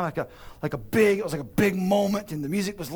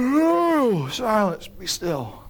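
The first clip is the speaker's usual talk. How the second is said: mock yawn, words drawn out, oh stretched; 3 semitones higher, 4 dB louder than usual. Retelling Jesus waking on a rocking boat and calming it: retelling words through a yawn. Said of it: "I think through a yawn".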